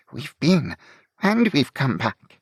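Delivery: wavering, unsteady voice. Reading a story, a character speaks to his companion in an unsteady voice. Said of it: "in an unsteady voice".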